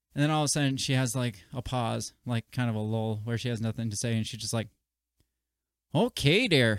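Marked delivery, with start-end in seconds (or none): 6.0-6.8 put-on loud Canadian accent, female local radio announcer style. Retelling what a radio announcer said during a lull: imitating a Canadian accent. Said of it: "in her, like, Canadian accent".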